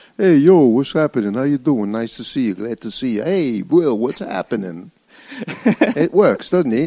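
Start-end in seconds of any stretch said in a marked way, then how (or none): 0.2-4.9 strong, full Brooklyn accent. Showing off the accent he is working on, a strong Brooklyn accent. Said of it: "I'm working on a strong Brooklynese. How's this sound?".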